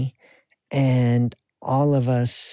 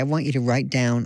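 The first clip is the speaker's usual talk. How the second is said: ordinary talk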